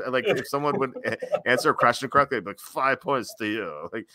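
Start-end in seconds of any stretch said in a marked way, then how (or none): 2.6-3.9 put-on slow, sloppy, slurred drunken speech. Retelling how a drunk professor ran class like a game show: imitating slurred words. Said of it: "slur his words".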